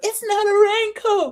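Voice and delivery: very high, protesting, defensive yell. Retelling a woman's argument about her coat, retelling her yell. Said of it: "She started yelling".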